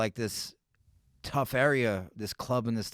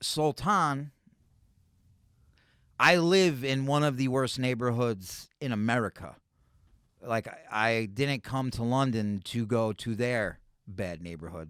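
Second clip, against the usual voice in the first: ordinary talk, nothing marked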